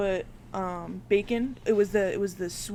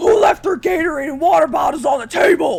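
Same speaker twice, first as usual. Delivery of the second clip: high, all-out, full-lungs scream; 8 semitones higher, 15 dB louder than usual. Retelling how a head guy yelled at the boys leaving, imitating someone screaming. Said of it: "he starts screaming at the top of his lungs".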